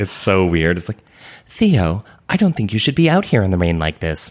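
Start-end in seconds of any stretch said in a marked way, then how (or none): 1.5-4.3 clumsy, bad put-on female voice. Mocking an audiobook narrator's voices for women, in a bad put-on female voice. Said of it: "he does these voices for all the women that are so bad".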